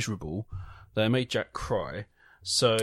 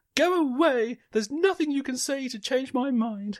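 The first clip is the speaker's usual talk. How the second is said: very high, exclaiming female voice. Reading a joke aloud, voicing the woman on the bridge: acting the woman's line. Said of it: "Great impression".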